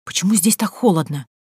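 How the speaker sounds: ordinary delivery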